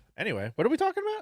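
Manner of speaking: hyped, high, fast, ramped-up call.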